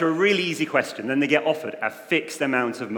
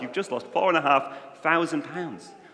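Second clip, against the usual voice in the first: usual speaking voice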